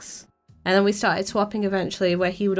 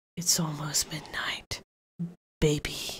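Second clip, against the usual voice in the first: put-on, slow, breathy, sultry seductive whisper; 4 semitones lower, 8 dB quieter than usual. Mocking a game character as excited about midnight: seductive Akihiko impression. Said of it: "His voice is very sexual".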